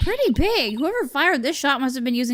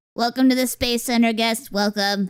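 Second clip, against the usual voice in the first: robotic, synthesized, flat monotone computer voice; 3 semitones lower than usual. Reading the game's robot guide's lines aloud: computer voice. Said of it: "the same computer voice".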